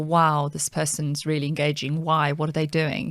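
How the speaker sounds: normal talking voice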